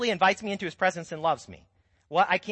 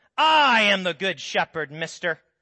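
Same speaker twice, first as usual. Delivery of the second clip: harsh, stern, put-on angry voice; 4 dB louder than usual. Showing the angry voice people hear behind scripture, in a mock-angry God voice. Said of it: "we hear this angry voice behind it".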